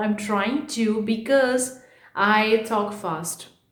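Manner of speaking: very slow, careful, deliberate talk. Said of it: "you can see I'm really talking slow".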